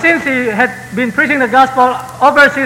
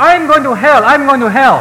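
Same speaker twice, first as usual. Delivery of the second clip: normal talking voice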